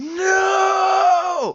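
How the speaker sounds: very high, very loud, shrill, drawn-out scream. Trying to scream his way out of a haunting dream, finally: very loud scream. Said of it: "finally comes out as like a very loud scream".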